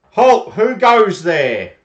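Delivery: very loud, high-pitched booming shout. Game master voicing armed guards at the gates, challenging newcomers, loud booming voice. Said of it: "They say with a loud and booming voice".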